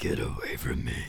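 deep, unnatural, threatening voice. Telling a story, demonstrating children threatening doctors, in a deep unnatural voice. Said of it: "children threatening doctors in deep, unnatural voices".

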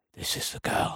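hushed, barely audible, breathy almost-whisper. Retelling a film scene's gangster line: imitating someone saying it quietly. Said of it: "I'm saying it at that level because he's saying it so quietly".

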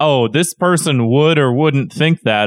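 normal talking voice

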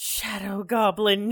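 put-on drunken, tipsy character voice. Voicing a character pointing dramatically at another: drunken character voice. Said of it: "in her drunken".

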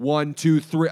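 very loud, high-pitched yell. Retelling counting off to a quiet group to get them loud, retelling a yell. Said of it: "I'm like yelling at them".

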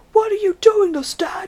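high, whispered mock shout in an accent. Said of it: "Till he shouts".

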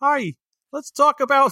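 put-on high-pitched cartoon frog puppet voice. Joking about reviewing a movie in a silly voice, trying a Kermit the Frog voice. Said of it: "I'll do it in Kermit the Frog voice".

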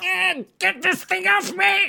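very high, creaky, rough, drawn-out scream. Voicing a monster with a hand on its face: screaming in character. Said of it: "He screams".

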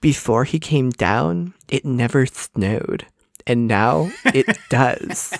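unhurried elfin delivery. Quoting a film line as a Drew Barrymore impression. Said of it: "a really good Drew Barrymore".

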